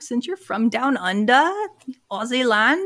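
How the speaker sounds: horrible, bad put-on Australian accent. Host on the show addressing guest Sarah; horrible Australian accent. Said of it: "Sorry, horrible accent".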